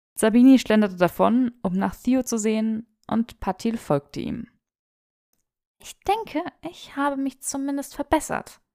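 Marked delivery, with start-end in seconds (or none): 5.8-8.6 soft, high-pitched murmur under the breath. Granger speaks after Sabini and Patil walk away, murmuring. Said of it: "murmelte Granger".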